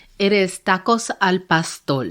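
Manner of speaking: Puerto Rican pronunciation, R sounds like L. Naming the dish being served: Puerto Rican accent, R like L. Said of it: "she has the Puerto Rican accent that says the R like an L".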